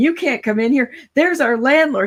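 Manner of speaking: frantic, high-pitched, loud screaming. Retelling college gals screaming at a man on their porch: imitating someone screaming. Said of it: "they start screaming".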